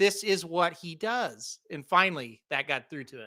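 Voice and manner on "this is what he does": very slow, deliberate delivery. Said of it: "I'm gonna say this very slowly".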